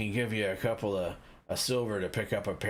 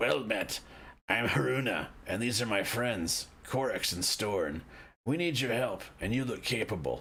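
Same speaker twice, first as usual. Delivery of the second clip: raspy voice, thickly muffled. Haruna introduces the group and asks Kith for help, in a raspy Haruna voice through a scarf. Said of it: "through a thick wool scarf and raspy voice says".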